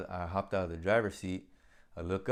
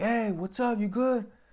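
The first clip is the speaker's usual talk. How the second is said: very high-pitched, loud, acted-out yell; 5 dB louder than usual. Retelling calling to my guy over the headset amid smoke: imitating own yell. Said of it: "And I'm yelling to my guy".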